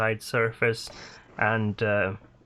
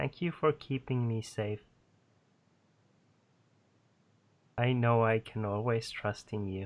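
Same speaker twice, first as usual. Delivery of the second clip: tiny, small, soft voice; 6 dB quieter than usual. The narrator voices the fairy dragon speaking inside a player's mind, tiny Niniak voice. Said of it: "You hear a tiny voice inside your mind".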